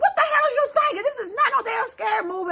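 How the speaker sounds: very high, panicked shrieking scream. Retelling being scared after turning down a dead-end street: retelling screaming at oneself. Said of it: "I'm screaming at myself".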